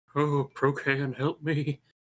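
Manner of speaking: whispering quietly under breath. Voicing a character praying to a god in battle: whispering under his breath. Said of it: "Kinda whispers under his breath".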